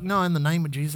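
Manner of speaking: mock muttering under breath. Retelling getting back on a plane: imitating muttering under breath. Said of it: "I kinda under my breath".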